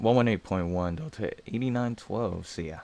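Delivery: voice breaking unexpectedly, cracking. Pilot reading back a frequency to ground before taxiing, voice cracking. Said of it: "Holy voice crack".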